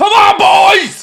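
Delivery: very high, very slow, loud, drawn-out yell. Host thanking viewers breaks off as his team attacks again, shouting. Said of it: "Sorry for shouting there".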